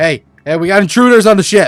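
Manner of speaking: shouting man's voice. Voicing a crewman running at an intruder on the ship: shouting crewman. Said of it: "they run at you and start shouting".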